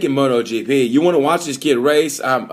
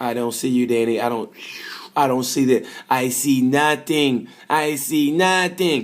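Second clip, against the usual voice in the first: unhurried, stretched-out delivery. Imitating the rider passing his crashed teammate: Marc Marquez impression. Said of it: "he was like".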